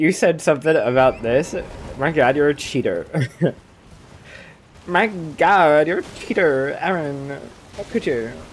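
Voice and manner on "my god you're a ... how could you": put-on Valley Girl accent, done for show. Acting out an example of a relationship scene in a valley girl accent. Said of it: "I'm just doing it because it's a Valley Girl accent".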